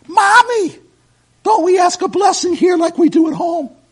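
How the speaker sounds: put-on very high, very loud, shrill little-girl voice. Retelling a little girl asking her mother about saying a blessing, in a high-pitched voice. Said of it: "a high-pitched voice".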